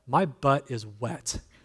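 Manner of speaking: deadpan, dead straight, slow delivery. Retelling a niece's reply after a ride: deadpan, imitating Caitlin.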